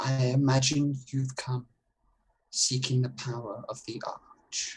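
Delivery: reverberating voice, as in a chamber. Narrating a game, the speaker voices a figure in a chamber: soft but booming, echoing voice. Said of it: "though this figure's voice is soft, it booms and echoes".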